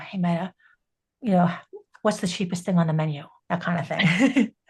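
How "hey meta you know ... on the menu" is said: soft whisper, lower pitch. Showing how to talk to the glasses in a quiet restaurant: whispering. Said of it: "I'm whispering".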